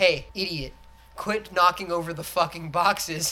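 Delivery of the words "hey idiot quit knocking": usual speaking voice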